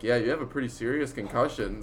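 ordinary delivery

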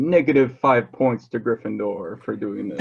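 ordinary talk, nothing marked

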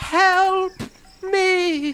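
put-on very high, loud, shrill haggard old woman shriek. The game narrator voices a woman calling from a broken window, haggard old woman voice. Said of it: "the haggard old voice of a woman".

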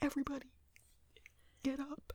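very soft, hushed, whisper-quiet voice. Describing a stepdad who has to be quiet waking everyone; imitating him speaking quietly. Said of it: "he has to be quiet".

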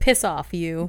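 play-acted loud, rude, mean-spirited delivery. Retelling a line from the episode, imitating a mean retort. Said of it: "I said it more meanly than she does".

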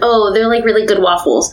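normal talking voice

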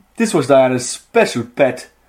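put-on Newcastle Geordie accent. Repeating a story line at a co-reader's request, said like a Geordie. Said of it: "Say it like a Geordie".

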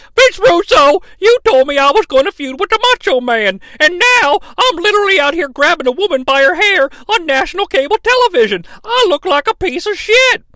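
very high, tearful yelling, fighting back tears. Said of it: "'cause he's doing his voice".

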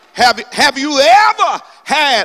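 preacher voice. Speaker preaching about hardship to listeners, raised voice. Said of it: "I didn't mean to raise my voice".

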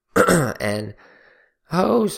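voice cracks very high on "hose". Describing a hose water filter from Walmart, voice cracking. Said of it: "that's my voice cracks".

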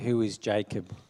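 usual speaking voice

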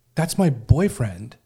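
put-on frightened, freaked-out voice. Retelling a woman's shocked reply on seeing her boyfriend: imitating someone freaked out. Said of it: "just looks freaked out and says".

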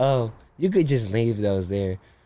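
mock casual, nonchalant, laid-back tone. Imitating a roommate who opens the door slowly: imitating nonchalant roommate. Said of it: "he's just so nonchalant".

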